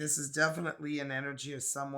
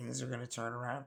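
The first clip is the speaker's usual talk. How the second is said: plain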